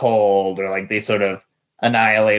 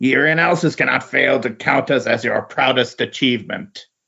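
generic go-to monster voice; 4 semitones higher than usual. Describing how the Skrull Emperor praises his own race, in Skrull Emperor voice. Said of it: "Nice Skrull voice".

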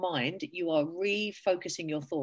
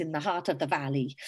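playful put-on Welsh accent on "valley"; 3 semitones lower than usual. Speaker explaining an inner-child analogy slips into a put-on Welsh accent. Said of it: "I can't say valley without saying a Welsh accent".

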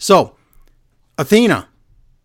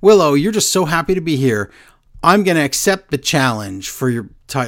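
ordinary delivery

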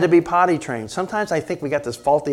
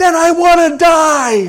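put-on screamy, very high little three-year-old voice; 13 semitones higher, 7 dB louder than usual. Retelling what a three-year-old said back, in a screamy little three-year-old voice. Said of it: "in a screamy little three-year-old voice said".

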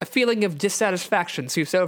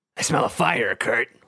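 voiced stage whisper; 5 semitones lower than usual. Reading Wolverine's line aloud from a story: half-whispering. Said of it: "Wolverine whispers".

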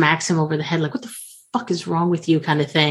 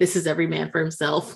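plain

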